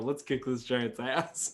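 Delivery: soft, hushed whisper under the breath. Speaking in character to Wayne Blade before fighting a giant: whispering. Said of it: "and I whisper to Wayne Blade".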